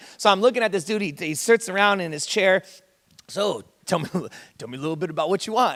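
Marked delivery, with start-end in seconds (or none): 3.3-5.8 put-on monster character voice. Retelling a man in his chair asking what the speaker wants, Cookie Monster voice. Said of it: "he sounds like the Cookie Monster now to me".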